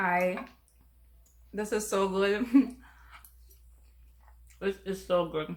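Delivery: speaking while chewing, mouth full. A host eating on camera for viewers, talking with food in mouth. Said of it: "not to talk with food in your mouth".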